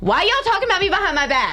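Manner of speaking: high-pitched, fast, mock outraged tone.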